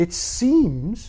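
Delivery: seems lifted high and stressed. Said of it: "I emphasize the word seems".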